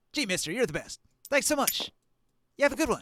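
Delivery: put-on very high street-kid voice. Narrating a game scene, the speaker voices a kid handed five copper: kid character voice. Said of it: "there's a kid".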